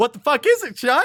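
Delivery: forced cheerful delivery. Asking the other speaker what today's pick is: put-on very cheerful tone. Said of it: "I say very cheerfully".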